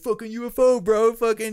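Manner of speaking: rowdy, high-pitched, loud mocking yell.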